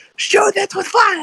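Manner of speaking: high-pitched scream.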